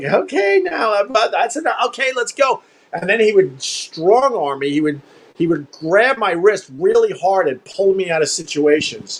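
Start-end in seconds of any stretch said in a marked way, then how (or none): 0.0-2.6 acted high, nervous half-laugh under the breath. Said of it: "he would have this kinda nervous, like, kinda laugh".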